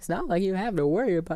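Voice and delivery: very high voice cracking and breaking up. Giving advice about writing your own way, voice cracking. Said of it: "that's the sound of my voice breaking".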